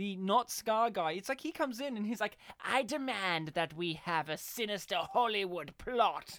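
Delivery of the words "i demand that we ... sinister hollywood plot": put-on sinister villain voice, English accent. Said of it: "he sounded like Scar from Lion King".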